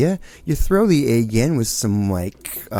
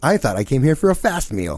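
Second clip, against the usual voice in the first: grumbling, pointed delivery; 4 semitones higher than usual. Retelling a complaint about slow service at a diner: retelling own loud complaint. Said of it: "I made sure I said it loud".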